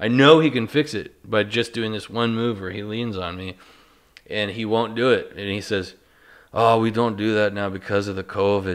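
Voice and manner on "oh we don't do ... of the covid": put-on Minnesota-style northern Midwest accent. Speaker quoting a man who won't do the move, imitating his northern Midwest accent. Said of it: "he says it like in like a northern".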